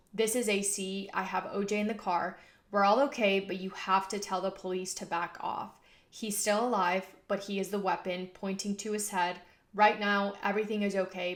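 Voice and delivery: ordinary talk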